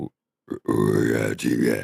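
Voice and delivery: very low, slow, creaky voice.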